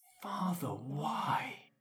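high murmur, spoken very close in. Voicing a creature speaking into a fighter's ear: said into the ear. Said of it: "it says in your ear".

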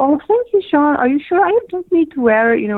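put-on lovely, high-pitched Swedish accent. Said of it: "in this beautiful Swedish accent".

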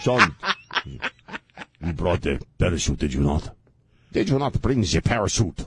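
put-on Austrian accent. Imitating the Austrian skydiving instructor asking about the parachute: imitating an Austrian accent. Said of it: "He sounded like something like a bad guy in a James Bond movie".

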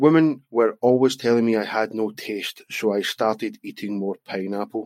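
ordinary talk

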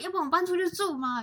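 mock fierce yelling outburst. Retelling a big fight with parents, imitating own fierce yelling. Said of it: "就是那种很凶".

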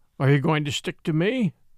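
ordinary delivery

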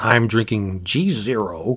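every word dragged out in newscaster style. Imitating how another speaker named his drink: Howard Cosell voice. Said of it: "It sounds like Howard Cosell on, on, on assignment".

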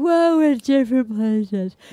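words spoken through a yawn. Retelling a reality show date's exit interview: imitating someone yawning while talking. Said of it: "he's yawning".

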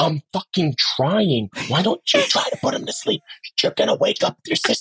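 hushed but angry whispered fight. Showing what a whisper fight sounds like: imitating a whisper fight. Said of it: "so that whisper fighting is".

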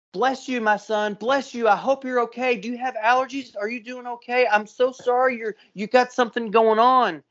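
sweet voice. Retelling what a woman said to him after sneezing: imitating Karen, sweet voice. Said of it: "she was the sweetest person ever".

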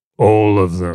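unsettling, creepy, eerie put-on voice. Answering how many channels and podcasts: creepy voice. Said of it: "in a really creepy voice".

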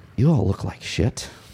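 gently delivered, softly cutting tone. A narrator voices a woman addressing the whole group, in a very soft voice. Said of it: "says in this very soft voice".

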